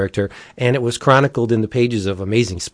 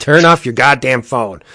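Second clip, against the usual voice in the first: put-on irritated call-in radio host voice; 4 dB louder than usual. Imitating Art Bell getting irritated with callers: imitating irritated Art Bell. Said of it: "Art Bell would be like".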